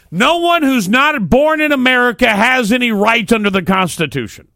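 very high, shrill, full-on screaming. Speaker making a point in a discussion with others, screaming. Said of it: "I'm sorry I screamed that".

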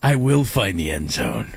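low, menacing action-hero impression voice.

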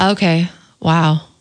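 deflated, disappointed, let-down tone. Saying the same line in several emotions for a rating, now disappointed. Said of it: "Now we have disappointed".

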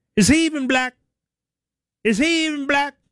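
very high, sing-song, swooping, doubting, skeptical tone. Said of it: "I say it in that voice".

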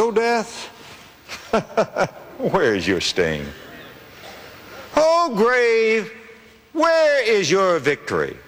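lightly sarcastic mocking taunt, high and swooping pitch. Quoting the Apostle Paul challenging death: imitating Paul's sarcastic taunt. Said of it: "old Paul gets a little sarcastic".

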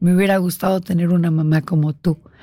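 ordinary talk, nothing marked

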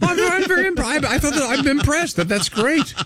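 mock impressed, gushing.

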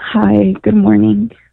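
downcast, sad-sounding. A caller from new mexico greets the host in a sad voice. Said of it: "You sound sad".

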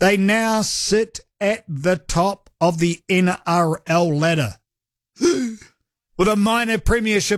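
slow, careful, deliberate word-by-word delivery. Repeating a sentence again to be sure of saying it right, slow and deliberate. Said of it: "I just have to say this again slowly".

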